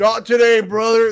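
loud, high, showy delivery. Retelling how an opponent stepped in, quoting him as Kevin Nash: Kevin Nash voice. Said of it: "That's how Kevin Nash says".

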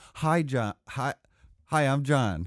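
very slow, dragged-out delivery. Taking a turn impersonating the other speaker: imitating John. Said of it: "I gotta impersonate you?".

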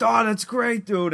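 put-on strong Boston accent. Retelling what a man who saw his shirt said, in a wicked boston accent. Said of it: "it was a wicked Boston accent".

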